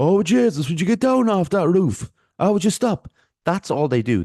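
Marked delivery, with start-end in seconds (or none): 0.0-3.1 thick put-on Irish accent, pitched very high. Showing how they would talk on a comedy thing, strong put-on Irish accent. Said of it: "this is the way I'd be like".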